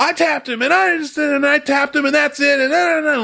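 play-acted, high-pitched, shrieking, run-on screaming. Retelling what an angry driver said after a crash: imitating someone screaming. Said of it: "screaming at me".

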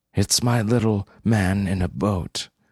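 plain

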